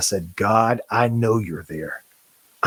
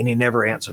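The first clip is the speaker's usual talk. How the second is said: ordinary talk, nothing marked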